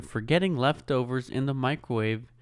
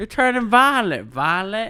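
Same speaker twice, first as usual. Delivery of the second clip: put-on American Southern accent, raised and high-pitched; 8 semitones higher, 6 dB louder than usual. Recalling a Willy Wonka scene, quoting a line in a Southern accent. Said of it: "Southern accent for them".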